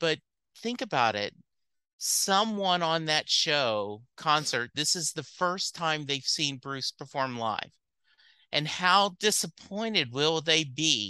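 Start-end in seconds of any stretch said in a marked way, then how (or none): none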